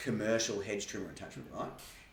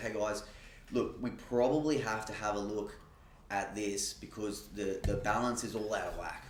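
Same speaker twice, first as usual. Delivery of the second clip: ordinary talk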